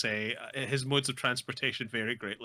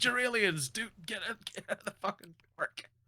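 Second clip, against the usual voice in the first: much higher, mock announcer yelling; 8 semitones higher than usual. Speaker recounts a park announcer yelling down the microphone; imitating an announcer yelling. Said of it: "He's yelling down the microphone".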